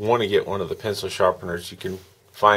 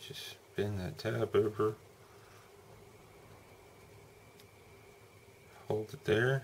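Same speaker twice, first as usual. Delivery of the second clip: soft, hushed, breathy near-whisper; 3 semitones higher, 14 dB quieter than usual. Talking through bending a tab into place, softly.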